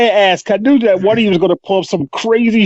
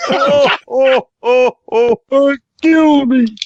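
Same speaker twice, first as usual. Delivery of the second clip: put-on grumpy puppet voice, higher pitch; 6 semitones higher than usual. Doing a Muppet voice among friends: bad Alf as Waldorf impression. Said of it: "the worst Alf as Waldorf and Stanton I've ever done".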